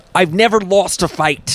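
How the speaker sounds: put-on voice with an almost British accent. Trying again after being told to get into character: Andrew Tate impression. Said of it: "Get into character".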